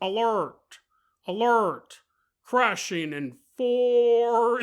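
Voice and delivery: very slow, mechanical, robotic announcement voice. Describing emergency lights like in a movie vessel: robot alert voice. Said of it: "the robot voice is like".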